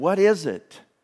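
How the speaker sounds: loud, rather perturbed tone. Retelling how a reluctant neighbor finally answered the door, imitating a perturbed voice. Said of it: "in a rather perturbed voice".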